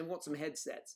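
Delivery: ordinary talk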